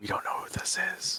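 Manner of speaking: hushed, breathy whispered aside. Playing a character in a roleplay, whispering to a companion. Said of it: "And I'm gonna whisper to Gantash".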